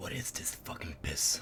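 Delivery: near-whisper, very quiet, breathy and super low. A character looks directly at the barkeep, pointing at the glass of ale: super low voice. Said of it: "He says in a super low voice".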